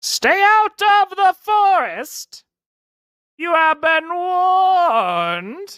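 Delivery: strange, weird, very high-pitched voice. Game master voices what the players hear as they step near the trees; weird voice. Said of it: "you hear a weird voice".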